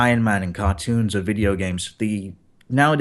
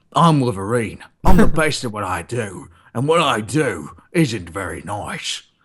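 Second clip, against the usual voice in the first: put-on Australian accent with a slight Cockney edge. Play someone throwing in an Australian accent as Wolverine, like a Hugh Jackman impersonator, a bit Cockney. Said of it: "Australian accent in there".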